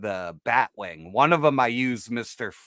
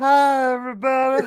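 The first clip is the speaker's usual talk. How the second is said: put-on stoned voice, higher and louder; 12 semitones higher, 6 dB louder than usual. Joking that the action figure looks high: imitating a stoned Spider-Man. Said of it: "He's just fucking blazed. He's like".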